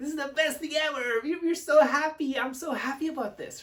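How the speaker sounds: very high, loud, bursting with excitement. Teaching vocal variety, demonstrating how to sound happy and enthusiastic. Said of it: "Now look at that tone and the energy".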